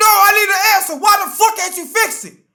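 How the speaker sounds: very loud, high, furious angry yell. Speaker acting out a customer demanding their phone be fixed, angry yelling. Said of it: "If you stop yelling".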